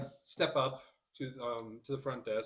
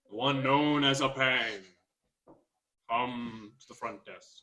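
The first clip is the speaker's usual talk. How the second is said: loud, echoing voice ringing through a hall; 3 dB louder than usual. The narrator voices a summons calling Apang to the front desk, loud, echoed voice. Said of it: "called in a loud, kind of echoed voice".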